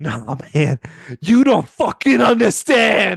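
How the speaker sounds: put-on laughing speech. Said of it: "Jimmy laughs".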